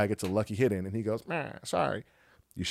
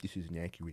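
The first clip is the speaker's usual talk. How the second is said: hushed, under-the-breath, passive-aggressive tone; 5 semitones lower, 14 dB quieter than usual. Describing own reaction at home while watching: mock passive-aggressive complaint. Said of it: "passive aggressive in my house".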